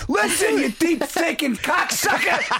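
very high-pitched, yelled-out voice. Imitating how the other speaker yells a compliment: imitating someone yelling. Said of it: "He yells at you".

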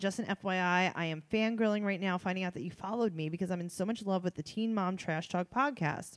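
usual speaking voice

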